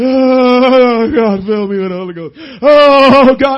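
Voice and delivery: very slow, drawn-out sobbing, "oh" stretched. Mocking people who come to the altar and only cry, imitating someone crying. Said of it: "all you do is cry".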